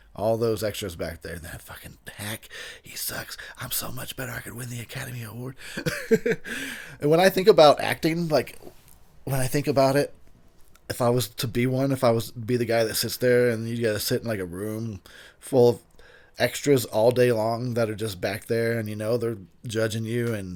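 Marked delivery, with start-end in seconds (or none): 1.4-5.6 soft, muttered under the breath. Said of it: "secretly under their breath talking shit".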